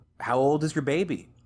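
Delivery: acted warm, excited woman's voice. Retelling what a lady asked a gruff man, imitating an excited, kind lady. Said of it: "she's very excited, very kind".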